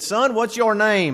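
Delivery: put-on slightly high-pitched Southern Georgia accent. Retelling an elderly evangelist calling him up at youth camp, in a georgia accent. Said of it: "with his Georgia accent".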